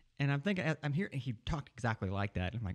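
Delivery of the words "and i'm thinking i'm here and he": usual speaking voice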